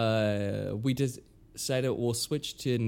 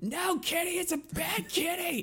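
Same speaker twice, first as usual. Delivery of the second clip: put-on screaming cartoon boy voice, higher. Retelling the sound clip set for the cat feeder: imitating Cartman screaming. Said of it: "I sampled Cartman screaming".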